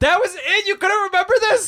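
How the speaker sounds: mocking voice pitched very high.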